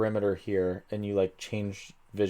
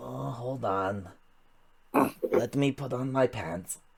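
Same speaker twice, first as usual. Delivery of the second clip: slow, drawn-out ratling creature voice; 3 semitones higher, 4 dB quieter than usual. Voicing the character the players call Pete, answering through a door: ratling creature voice. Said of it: "the voice that you used is the same voice that you used for the rattling".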